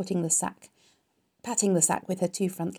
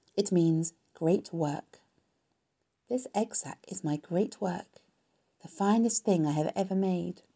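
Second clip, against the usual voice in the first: ordinary delivery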